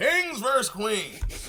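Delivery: animated, high, loud, swooping sing-song put-on character voice. Announcing Kings versus Queens in the speaker's Beasley voice. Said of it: "In my Beasley voice".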